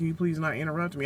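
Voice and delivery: normal talking voice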